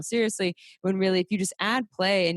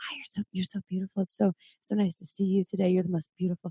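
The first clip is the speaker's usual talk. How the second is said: sweet, soft, barely audible whisper. Retelling how her partner talks to her body: imitating her partner whispering. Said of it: "he starts whispering".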